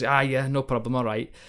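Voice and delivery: terrible mock Scottish accent. Retelling a story, the speaker quotes Ferguson's reply: awful Scottish accent as Ferguson. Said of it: "sorry that's a, an awful scottish accent".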